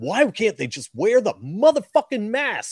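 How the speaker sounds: put-on, very high, swooping, furious rant. Speaker recalls hearing Scott Horton go off: Scott Horton angry rant impression. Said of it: "he was super pissed".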